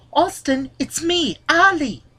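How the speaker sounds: high-pitched British accent impression.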